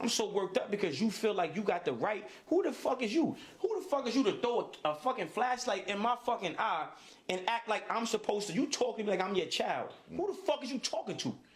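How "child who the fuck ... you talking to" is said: normal talking voice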